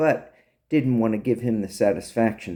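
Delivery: ordinary delivery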